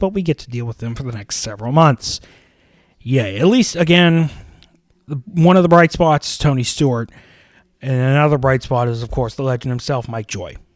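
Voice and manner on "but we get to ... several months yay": dry, dripping sarcasm with mock cheer. Reacting to the next several months ahead: sarcastic tone. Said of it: "hinted the sarcasm into my voice".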